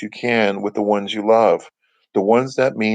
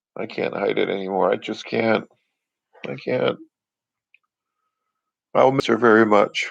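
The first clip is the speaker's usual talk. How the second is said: choked up, a little emotional, voice catching. The speaker talks about a woman they will miss, a little emotional. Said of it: "I'm getting a little emotional right now".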